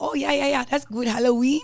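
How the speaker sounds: put-on Haitian accent. Retelling a father's reaction to a photo, imitating dad's Haitian accent. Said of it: "with his accent".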